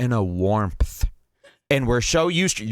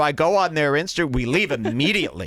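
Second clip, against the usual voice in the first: ordinary delivery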